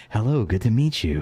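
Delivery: silky, smooth and sly gliding delivery. Describing a sly character's way of talking; Sunday Evening's silky voice. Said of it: "he talks very silky".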